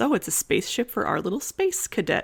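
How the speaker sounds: mock kind, gentle, silly, playful teasing teacher voice. Retelling a teacher's joke about a student's rocket drawing: imitating a gentle, silly teacher. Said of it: "she says it in a very, like, gentle, silly kind of".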